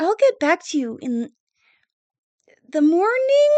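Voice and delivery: questioning, unsure upward lift at end of morning. Voicing a character who is unsure of the timing: unsure questioning rise. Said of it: "she kinda question mark".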